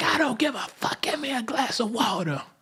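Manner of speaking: shrill, very high screaming. Retelling how a mother yells at her grown son: imitating a screaming mom. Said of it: "mom screaming in the back".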